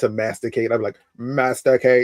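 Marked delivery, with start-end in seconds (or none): 1.2-2.1 metallic, robotic sci-fi alien voice. Retelling telling the kids to eat at dinner: Dalek voice. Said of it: "I always used to do the Dalek voice".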